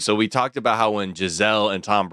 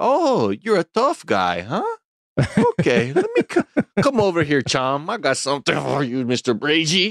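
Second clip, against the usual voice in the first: lilting, swooping, pitched-up put-on Portuguese accent; 6 semitones higher than usual. Warning someone, acting out how a tough guy would taunt him: Portuguese accent. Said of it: "that Portuguese accent".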